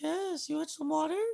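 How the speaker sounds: goofy, very high-pitched put-on voice. Speaker imitates a guy from a TV episode; imitating a high-pitched voice. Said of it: "talking with like a high ass voice".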